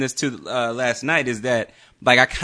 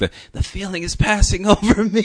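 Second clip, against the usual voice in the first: mock panic while laughing, higher pitch; 8 semitones higher than usual. Imitating how the other speaker talked during panic attacks, laughing. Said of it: "So I can't do it without laughing".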